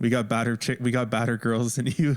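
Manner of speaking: normal talking voice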